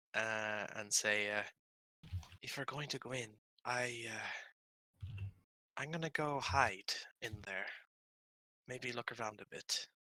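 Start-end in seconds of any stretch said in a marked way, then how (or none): 2.4-9.8 hushed half-whisper, under the breath. Voicing a character proposing to hide inside and look around: half-whispering in character. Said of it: "kind of whisper".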